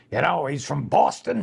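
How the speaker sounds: rough, gravelly, scraped-out voice. Describing an audition role, imitating Johnny Most. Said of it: "He kinda talks like this".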